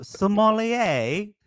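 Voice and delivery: put-on British accent. Answering a request to say a word in a British accent: British accent. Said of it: "can you say sommelier in a British accent".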